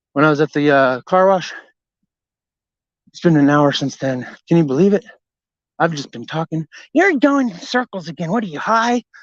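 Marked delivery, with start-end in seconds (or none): 7.0-9.1 nagging, complaining voice. Mimicking someone who nags in the ear, mid-story: imitating a nagging voice. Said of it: "when I do my voice like that".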